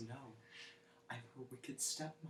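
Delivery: dead-serious deadpan, very quiet and certain. Retelling a fake toy ad where a child answers a parent: imitating deadpan conviction. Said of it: "with the utmost conviction and deadpan and says".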